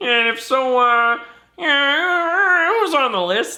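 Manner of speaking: very high, loud puppet voice, yeah drawn out. Reading a listener question aloud after being asked: Kermit voice. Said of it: "read in the fucking Kermit voice".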